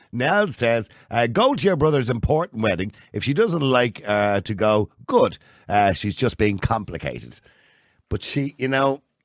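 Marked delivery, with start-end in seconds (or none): none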